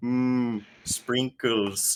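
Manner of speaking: cartoon father voice, robot style. Playing a wandering Homer Simpson robot, in a Homer Simpson robot voice. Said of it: "the Homer robot".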